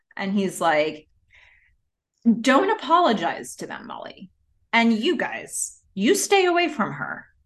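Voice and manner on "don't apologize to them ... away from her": mock dead-serious, stern, hostile tone with raised pitch. Retelling a man telling off a woman and her friends, sarcasm dropped. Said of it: "the sarcasm quickly leaves his voice".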